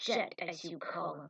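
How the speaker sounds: plain reading voice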